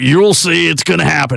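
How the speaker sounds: put-on high, fast ranting talk-radio voice.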